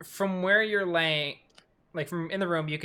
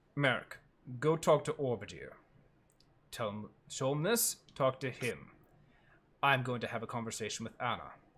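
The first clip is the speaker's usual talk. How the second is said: put-on calm voice, lower and quieter; 5 semitones lower, 7 dB quieter than usual. Retelling a game scene where Merrick demands the truth, imitating Thimold, very calm. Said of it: "And [name] is very calm".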